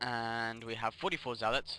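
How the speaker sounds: usual speaking voice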